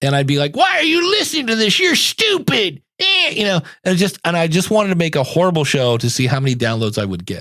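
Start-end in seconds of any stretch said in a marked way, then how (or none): 0.5-3.6 put-on very high, crotchety, grumpy old-man voice. Podcaster acts out his own deliberately bad show, in a grumpy old man voice. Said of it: "in a grumpy old man voice".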